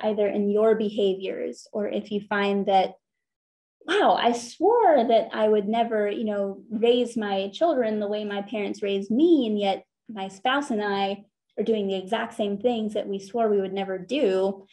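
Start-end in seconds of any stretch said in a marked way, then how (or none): none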